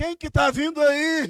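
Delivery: mock shouting. Retelling someone calling out in the dark: imitating a shout in the dark. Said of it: "dá um grito no meio do escuro".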